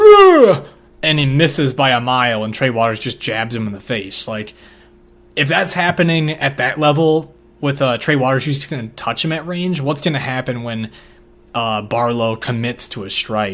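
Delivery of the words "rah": high, loud, grunting yell. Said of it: "he just grunt yells".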